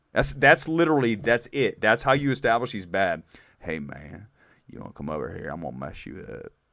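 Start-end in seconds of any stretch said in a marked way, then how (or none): 3.6-6.6 very quiet, low, hushed, put-on Southern accent. Mocking a film's redneck villain, speaker does a put-on Southern accent. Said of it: "That's a pretty good Southern accent".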